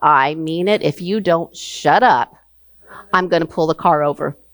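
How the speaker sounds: stern, no-nonsense fatherly voice. Retelling a father's warning from the front seat: imitating father's stern voice. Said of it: "My father just said to me in a stern voice".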